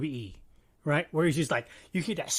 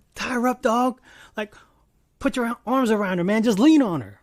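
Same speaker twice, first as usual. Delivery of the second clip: loud, high-pitched hollering; 6 semitones higher, 6 dB louder than usual. Retelling own reaction to a fight on screen: imitating own yelling at the tv. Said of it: "I was yelling at the T V screen".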